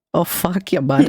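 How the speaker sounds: put-on Upper Midwest Minnesota accent. Talking to chat in a joking way: put-on Minnesota accent. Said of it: "have the Minnesota accent".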